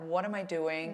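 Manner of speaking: put-on sorrowful, low-spirited, down-hearted tone. Imitating a rider who cried after a bad race: imitating someone sounding sad. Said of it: "so sad and so".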